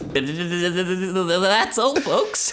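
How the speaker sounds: high, loud cartoon-style delivery, "that's" drawn out. Speaker, urged not to be shy, tries a Porky Pig impression. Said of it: "Is that it?".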